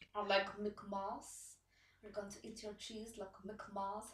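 put-on Russian-accented broken English with words jumbled. Retelling a scene from New Girl: imitating Nadia from New Girl. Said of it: "when Nadia goes on a date with Schmidt and then says".

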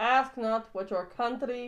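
put-on delivered with a Russian accent. Debating whether JFK had a Boston accent, quoting him: JFK impression, Russian-sounding. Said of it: "You just did a Russian accent".

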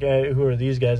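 ordinary delivery

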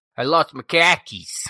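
Boston-accented speech. Trying out the suggested line for the others, Boston accent. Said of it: "Let me try out".

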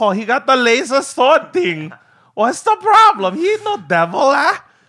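put-on heavy pidgin accent, very high-pitched. Imitating a woman's reply about a lightsaber, in a heavy pidgin accent. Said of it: "in her heavy, like, pigeon accent".

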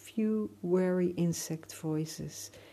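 ordinary delivery

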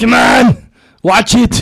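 fake robotic machine voice. Asked by the others to give a little Terminator: Terminator voice. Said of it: "Give us a little Terminator".

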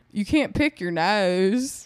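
put-on campy Southern accent, nasal and drawn out.

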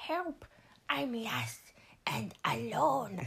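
very slow, drawn-out, swooping cartoon creature voice. Recalling a favorite movie's ending, the speaker tries a Stitch voice. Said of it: "I can't do fucking Stitches voice".

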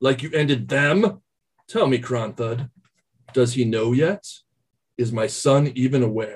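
scheming lich character voice. In a game session, the lich replies to Kronthud; speaking as the lich. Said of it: "Your blasphemy and your manipulations will soon come to an end, lich. / you hear your father, you hear [name]. He says".

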